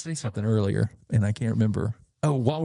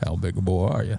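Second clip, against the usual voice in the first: put-on Oklahoma accent, lower; 3 semitones lower than usual. Talking with someone about the accents they do, doing a Roy D. Mercer impression. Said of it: "when you went into that other accent".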